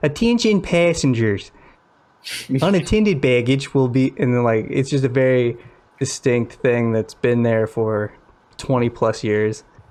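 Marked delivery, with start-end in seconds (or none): 0.0-4.1 put-on overdone Midwestern accent, like an announcement lady. Describing a Midwestern airport announcement, imitating the lady's exaggerated announcement-lady accent. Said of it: "such an exaggerated accent".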